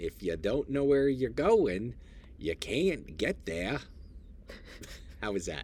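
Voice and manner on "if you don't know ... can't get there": loud, laid-on Maine accent. Say the line for your listener, then ask how it was, in an old Down East Maine accent. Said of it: "I'm going to say it like in an old down east Maine accent".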